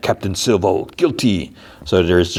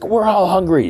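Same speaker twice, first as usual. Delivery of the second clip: put-on shout, pitched very high; 12 semitones higher than usual. Recounting a scene where a man speaks to a murmuring group, imitating his shout. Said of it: "And he shouts".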